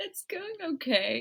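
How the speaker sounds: giggling, laughing through words, very high-pitched. Co-host answering the host's greeting at the podcast's start, laughing while talking. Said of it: "sorry I'm laughing".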